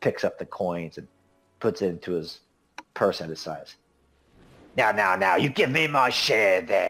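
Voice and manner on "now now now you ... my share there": snarling voice with swooping pitch. Voicing a squint-eyed man who picks coins from the mud: snarling. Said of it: "And he just kinda snarls".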